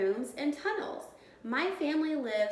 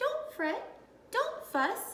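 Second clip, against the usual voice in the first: squeaked out, very high pitch; 11 semitones higher than usual. Mouse answers the blubbering bear in Mouse's squeaky voice. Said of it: "Mouse squeaks".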